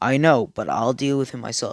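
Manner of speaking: stern, authoritative tone. Retelling an anime scene where the Hokage answers the police: retelling a stern reply. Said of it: "in a stern voice".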